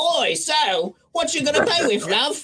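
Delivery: put-on Cockney accent, pitched very high. Describing a favorite Marvel character, speaker quotes her in a Cockney accent. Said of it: "I also like her like Cockney accent".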